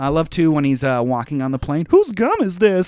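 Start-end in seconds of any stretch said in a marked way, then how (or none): 1.9-2.9 high, goofy action-hero character voice. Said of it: "he's got such a goofy voice".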